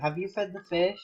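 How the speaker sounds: soft, hushed, secretive stage whisper. Speaker retells what their mom asked them: imitating mom half-whispering. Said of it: "She like whispered".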